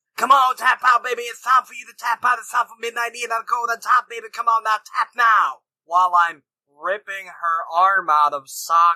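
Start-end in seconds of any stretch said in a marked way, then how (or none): 0.2-5.6 put-on high-pitched, goading, screaming voice. Acting out a wrestling move on a friend in a game: screaming in character. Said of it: "I'm wrenching the hole back and screaming".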